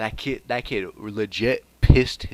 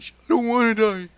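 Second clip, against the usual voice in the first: put-on sobbing, higher and louder; 13 semitones higher, 5 dB louder than usual. Retelling a story, voicing a bully running away: crying in character. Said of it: "The kid just starts running away, crying".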